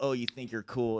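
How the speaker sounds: imitated sly, jabbing delivery. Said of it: "kinda like, like, sly".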